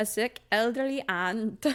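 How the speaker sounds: clumsy, bad put-on Australian accent. Summarizing a story about Gladys to Bill, trying a bad Australian accent. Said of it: "I'm really bad at my Australian accent now".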